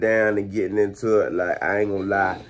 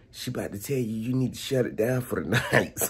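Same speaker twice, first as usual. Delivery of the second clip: soft, hushed whisper; 2 semitones higher, 6 dB quieter than usual. Retelling a warning to shut it down for the night: imitating a whisper. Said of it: "he whispers".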